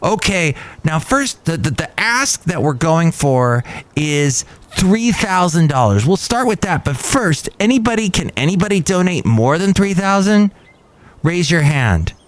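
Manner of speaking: high, screaming yell, like a fundraiser host. Recounting a fundraiser where a man pushed everyone to donate, imitating his screaming and yelling. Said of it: "the guy who's screaming and yelling at everybody".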